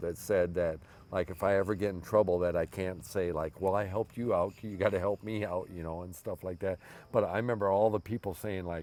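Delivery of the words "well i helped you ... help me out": normal talking voice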